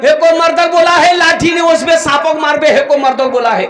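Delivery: women's panicked screaming.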